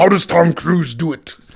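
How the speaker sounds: high-pitched put-on character voice. Quoting the line again as said in the movie: Venom voice. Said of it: "he says".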